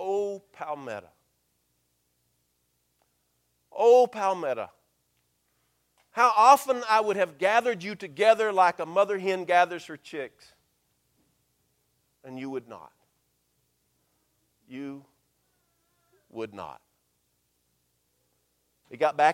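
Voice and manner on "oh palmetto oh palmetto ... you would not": strong, forceful whisper. Retelling words spoken at a town sign: imitating a strong whisper. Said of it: "a strong whisper".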